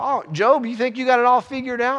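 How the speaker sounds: put-on, very high-pitched, really sarcastic voice. Paraphrasing the questions put to job, retelling sarcastic questions. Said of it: "really sarcastic questions".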